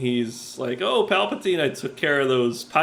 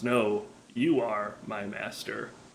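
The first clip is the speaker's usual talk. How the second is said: put-on mutter, quieter; 4 semitones lower, 8 dB quieter than usual. Speaker retells a scene, imitating Darth Maul muttering. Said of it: "under his breath".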